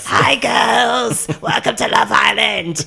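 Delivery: rough, gravelly rasp. The show's host greets the girls in the first episode: imitating a very raspy smoker's voice. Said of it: "she's got a very like smoker's raspy voice".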